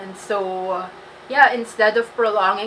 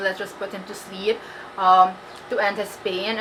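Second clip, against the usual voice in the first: ordinary delivery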